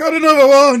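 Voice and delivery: piercing yell, very high and very loud. Voicing a character who just knocked an enemy dead: shouting. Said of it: "you just hear Mushy shout".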